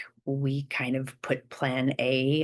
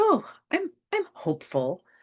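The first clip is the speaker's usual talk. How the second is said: very high, swooping, hopeful with a thread of doubt; 14 semitones higher than usual. Showing how hope sounds with doubt in it: doubtful hopeful tone. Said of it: "can you hear the, the thread of doubt".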